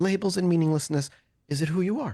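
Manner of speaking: high, longing, almost wistful tone. Narrator voicing a woman answering without lifting her head: almost wistful voice. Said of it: "a kind of almost wistful voice".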